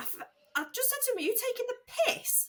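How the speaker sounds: high, fast, outraged, indignant voice.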